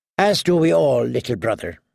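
ordinary delivery

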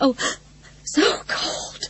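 small, breathless, desperate whispered voice near crying. Narrator voicing a woman crying out in the cold, desperate, breathless little voice. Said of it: "She cried in a desperate, breathless little voice".

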